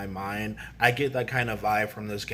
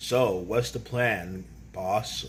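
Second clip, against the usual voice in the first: normal talking voice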